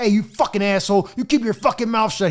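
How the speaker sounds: furious, snapping, raging rant. Retelling how a security officer went off on him: imitating a furious rant.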